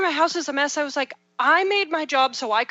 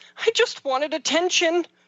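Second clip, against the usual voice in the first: mock, tearful, small young child's voice; 3 semitones higher than usual. A parent retells what Brennan said: imitating Brennan, tearful. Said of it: "little sad puppy dog eyes filled with tears".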